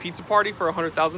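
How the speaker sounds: ordinary delivery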